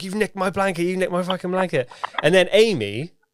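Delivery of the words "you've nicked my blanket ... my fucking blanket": furious, angry, accusatory outburst, pitched up. Retelling arguing with a guy over a blanket: imitating own angry outburst. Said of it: "so angry with this guy".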